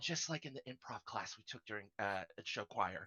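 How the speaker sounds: very quiet, barely audible whisper. Whispering in character to a teammate during a shared task: whisper. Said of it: "I'm gonna whisper".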